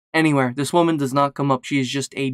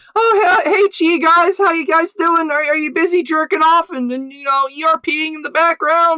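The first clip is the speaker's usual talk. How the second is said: very high-pitched, loud, obnoxious voice; 5 dB louder than usual. Describing running around VR chat lobbies as Morty, Morty impression. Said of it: "I try to be as obnoxious as possible".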